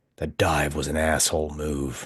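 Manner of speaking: whispering. Playing a character who whispers to a kneeling foe: whisper. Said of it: "And I whisper to him again".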